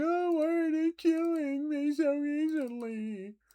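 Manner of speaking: very high, very slow, whiny fake crying. Imitating a past self crying over enemies killing them easily: mock crying, imitating past self. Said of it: "where I'm crying".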